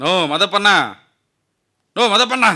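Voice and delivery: high-pitched loud shouting.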